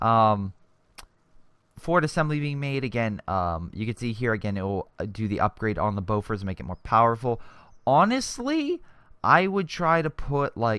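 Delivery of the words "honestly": voice breaking mid-phrase, high and slow. Speaker suggesting where to place a build in a game, voice cracking. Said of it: "did my voice crack?".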